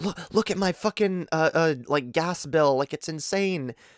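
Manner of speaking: mock flustered, freaked-out, frantic grandmother voice. Retelling how the grandmother showed the gas bill: imitating someone freaking out. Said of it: "was, like, freaking out".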